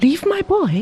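exclaimed in a very high-pitched voice. A man told by officials they will keep his boy, exclaiming. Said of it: "exclaimed Hong Hing".

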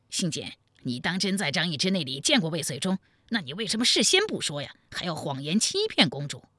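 ordinary delivery

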